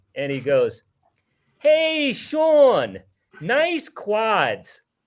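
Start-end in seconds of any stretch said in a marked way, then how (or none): 1.6-4.8 put-on thick New Jersey accent, loud, very slow, drawn out. Retelling a fan behind them heckling sean at the free throw line, thick jersey accent. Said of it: "real thick Jersey accent".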